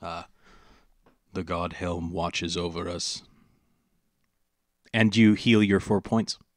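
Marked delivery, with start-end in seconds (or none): 0.0-3.2 monotone paladin voice, lower, quieter. Game master voicing the paladin healing a party member: William's monotone, serious voice. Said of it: "will say in a very monotone, serious voice".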